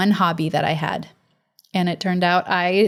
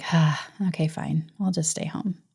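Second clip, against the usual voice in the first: mock weary resigned sigh, quieter; 2 semitones lower, 5 dB quieter than usual. Acting out a tired listener who exhales and gives up: acting out a resigned exhale. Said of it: "you just exhale and like".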